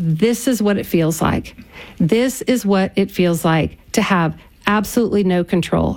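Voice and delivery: ordinary talk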